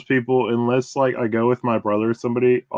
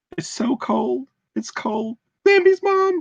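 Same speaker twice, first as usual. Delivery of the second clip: very high, octaves-up filtered deer voice; 13 semitones higher than usual. Retelling a clip she sent a friend, quoting herself; way higher-pitched voice. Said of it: "your voice got like way octaves higher".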